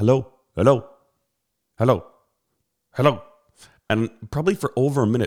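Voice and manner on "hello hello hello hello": loud, put-on Indian accent. Retelling a phone call the speaker answered without a word; Indian accent. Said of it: "this guy with an Indian accent".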